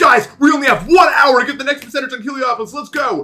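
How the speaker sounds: frenzied, frantic hype, very high and very loud. Streamer imagining going live with one hour left, frantic tone. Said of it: "really frantic tone of voice".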